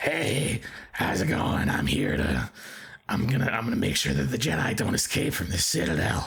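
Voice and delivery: roughened, gruff voice. Describing a favorite line from an episode, Sobek's gruff voice. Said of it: "got a very gruff voice".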